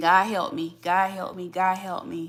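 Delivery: tearful, crying, pleading voice. Retelling praying every day going to a job: imitating own past crying plea. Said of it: "going to a job every day crying and saying".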